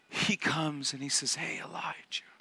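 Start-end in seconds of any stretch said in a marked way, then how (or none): 1.3-2.2 soft, hushed whisper. Retelling how God speaks to Elijah: whispering as God. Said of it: "He comes in a whisper".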